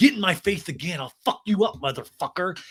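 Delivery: hostile, aggressive, confrontational, menacing. Retelling a fight, imitating a threat: imitating an aggressive threat. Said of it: "this is pure steroids talking".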